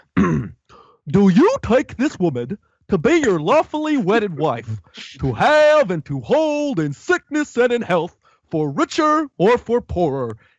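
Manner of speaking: high, swooping, slow, sing-song cartoon priest voice. Retelling a wedding scene and voicing the priest: priest in Mr. Dink voice. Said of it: "I'm gonna talk as if he was".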